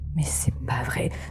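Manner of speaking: soft, hushed, barely voiced whisper. Speaking as their character in a role-play, whispering. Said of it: "en chuchotant".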